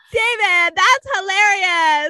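high, loud, fake chatty put-on voice.

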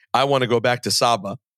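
ordinary talk, nothing marked

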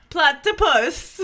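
very loud, high, botched British accent. Asked how to say a word in a british accent, speaker tries it: attempted british accent. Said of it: "How do you say platypus if you have a British accent?".

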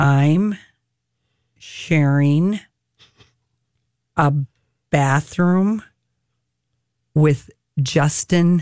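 deep, low-register, low-voiced aside. Retelling what a man said coming out of his dressing room, retelling a low voice. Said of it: "said in that low voice".

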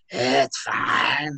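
put-on demonic voice. Retelling her reply after being woken to drive to school, demon voice. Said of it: "like a demon voice".

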